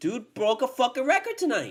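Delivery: worked-up heated outburst, very loud and high. Ranting about a player being benched after breaking a record: heated, angry rant. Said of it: "I'm trying not to get heated".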